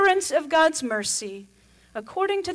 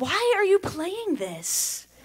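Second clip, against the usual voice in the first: mock snotty teen voice, higher; 6 semitones higher than usual. Retelling a son's question in the car: imitating a snotty teenager. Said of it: "sort of the snotty teenager".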